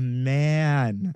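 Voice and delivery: emphasis on 'man'. Answering a question about his go-to cocktail: stressing 'man'. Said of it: "Emphasis on the man".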